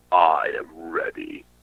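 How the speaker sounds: slow, dead-straight, breathy whisper. Retelling an interview where the actor answered in Pinhead voice. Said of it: "in straight, perfect Pinhead voice".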